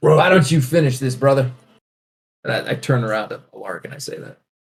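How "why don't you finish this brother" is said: put-on macho voice, fake southern drawl. Retelling a line she said when suddenly going macho, put-on macho southern accent. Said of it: "all macho man all of a sudden in a southern accent".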